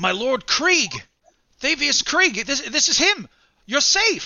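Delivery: stunned, overjoyed, very high, rising shocked delight. A narrator voices Rhea entering the room and seeing the man; shocked and happy. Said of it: "Just like in shock and happiness".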